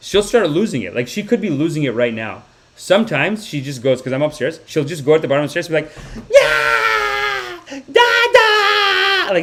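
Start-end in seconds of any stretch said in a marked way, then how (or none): 6.3-9.3 put-on very high, gleeful kid scream, "dada" drawn out. Retelling the kid calling from the bottom of the stairs: imitating a child screaming. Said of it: "she's just screaming".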